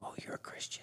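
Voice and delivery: soft whispered aside. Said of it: "whispered in, and she goes".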